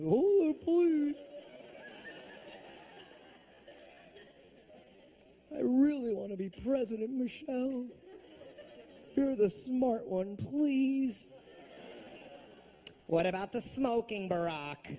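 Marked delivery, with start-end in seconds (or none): 0.1-11.3 goofy, cartoonish voice with swinging, swooping pitch. Comedian plays Barack talking to Michelle, done in a Bullwinkle voice. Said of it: "I'd turn him into like fucking Bullwinkle or something".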